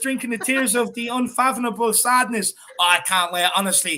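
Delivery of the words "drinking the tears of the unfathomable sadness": usual speaking voice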